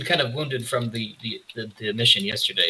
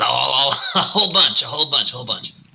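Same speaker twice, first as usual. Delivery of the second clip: creature voice with a cackle; 2 semitones higher, 3 dB louder than usual. Voicing a quasit asked how much sarcasm it can relay: cackling quasit voice. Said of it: "it cackles".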